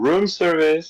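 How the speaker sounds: high-pitched, loud shout. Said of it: "just shout".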